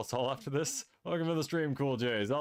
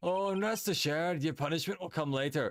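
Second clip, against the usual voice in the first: put-on Scottish accent; 2 semitones higher than usual. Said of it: "most Scottish German ever to exist".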